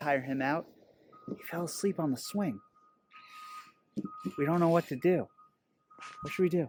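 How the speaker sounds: very quiet, very soft, hushed half-whisper. Parent whose son fell asleep on the swing explains the situation, half-whispering. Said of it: "I'm whispering".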